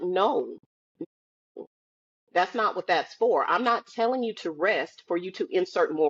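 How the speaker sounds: usual speaking voice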